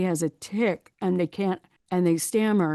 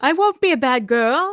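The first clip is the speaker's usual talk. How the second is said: raised, high-pitched voice; 7 semitones higher, 7 dB louder than usual. Explaining that liars' pitch rises, imitating someone lying in a high lying voice. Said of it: "when somebody's lying, their pitch gets higher".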